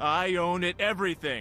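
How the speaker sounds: self-assured. An actor records a slate labeled Confidence; confident. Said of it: "Slate, Confidence".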